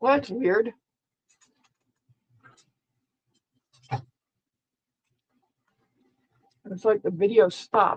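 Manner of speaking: talking while chewing, mouth full. Speaker presenting a video while eating almonds, talking while chewing. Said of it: "I'm crunching on some almonds".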